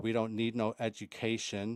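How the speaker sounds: ordinary talk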